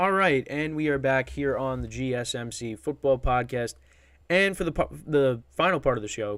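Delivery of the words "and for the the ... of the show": stumbling, stuttering, tripping over the words. Podcast host introducing the final part of the show, stumbling over words. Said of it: "just stuttering over my words here".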